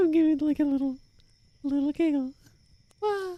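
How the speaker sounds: very high voice pushed to top of range. Testing how high the voice can go, in a very high-pitched voice. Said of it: "Let's see how high my voice can go".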